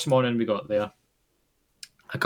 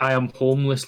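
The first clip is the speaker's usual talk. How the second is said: ordinary talk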